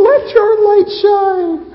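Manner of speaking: very high-pitched, loud, tiny mousy squeak. Picturing the Sermon on the Mount said the wrong way: mousy-voiced Jesus. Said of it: "in a little mousy voice".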